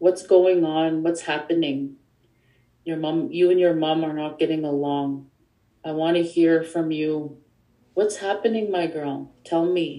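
put-on calm, gentle, kind speaking voice. Retelling her father sitting by her bed, imitating him speaking calmly and kindly. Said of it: "calmly and kindly".

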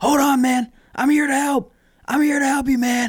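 very high, frantic, urgent scream. Retelling a passerby rushing to help a rooftop dummy, imitating someone screaming. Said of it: "runs up and starts screaming".

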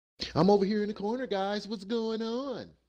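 very high-pitched, loud, pumped-up hype-man voice. Opening a podcast episode and greeting the listeners, in a hype voice. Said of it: "Like that hype voice? That's my hype voice".

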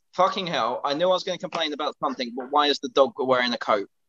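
normal talking voice

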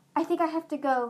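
panicky, alarmed voice. Narrator reads a character saying he must leave before dawn, panicked voice. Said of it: "he said in a panicked voice".

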